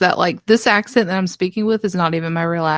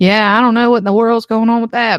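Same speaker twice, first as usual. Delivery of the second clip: loud, heavy, thick North Carolina mountain accent; 3 semitones higher, 5 dB louder than usual. Showing how they talk around a friend from the Appalachian Mountains: thick Appalachian country accent. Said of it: "me and her will be just talking like this all day".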